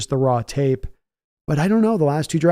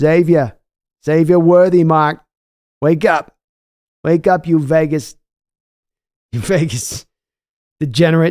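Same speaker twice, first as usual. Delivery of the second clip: put-on loud New York guy voice, full accent; 5 dB louder than usual. Acting out a dad's voice speaking to his sleeping son, New York accent. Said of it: "He was New York guy".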